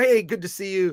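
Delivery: ordinary talk, nothing marked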